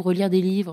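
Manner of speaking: normal talking voice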